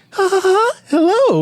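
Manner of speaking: put-on clown laugh. Retelling a movie scene: imitating a clown laugh. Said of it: "starts doing his little best clown impression".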